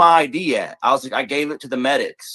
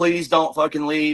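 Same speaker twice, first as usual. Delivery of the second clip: put-on pleading, begging voice. Retelling how she begged the speaker not to leave: imitating someone begging. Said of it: "begging me".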